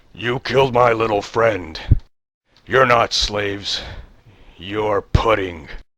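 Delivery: hulking brute's roaring, half-strength monster bellow. A game master voices the bugbear as it crushes Sorrow, bellowing bugbear roar. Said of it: "The bugbear roars as he crushes Sorrow to the ground. He bellows".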